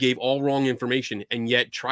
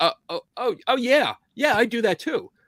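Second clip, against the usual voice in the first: mock very high, faltering, hesitant stammering voice; 10 semitones higher than usual. Imitating an interviewee's hesitant reply: imitating a hesitant voice. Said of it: "you can hear the hesitation in his voice going".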